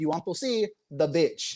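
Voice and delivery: put-on thick Filipino accent. Retelling his grandma's question to him, in a thick filipino accent. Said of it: "very thick Filipino accent".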